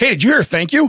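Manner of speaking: loud, high-pitched, pointed, carrying delivery. Retelling a remark made to Jeremy while leaving the aisle: retelling saying it really loud. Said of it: "I said it really loud to Jeremy".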